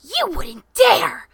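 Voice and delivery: piercing, shrill scream at full volume. Kimmy answering a girl's threat about her parents, screaming. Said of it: "Screamed Kimmy".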